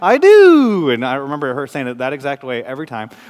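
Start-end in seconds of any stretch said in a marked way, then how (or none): 0.0-0.9 put-on very high, very loud squealing toddler woo. A parent recalling how their three-year-old daughter answered, imitating her toddler daughter. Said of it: "she'd always go, "Woo,"".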